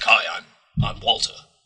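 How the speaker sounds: gruff, growling caped-hero voice. Describing someone's Walter character voice and doing it: gruff Batman-type Walter voice. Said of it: "sort of a standard gruff Batman-type voice".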